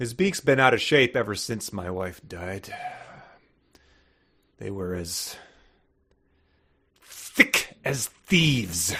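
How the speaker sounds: faintly bitter tone. An actor reads a line after the director's note: hint of bitterness. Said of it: "Hint of bitterness".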